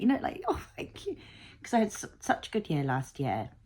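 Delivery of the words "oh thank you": high, whispered, tearful voice. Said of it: "crying when I knew I had my ticket".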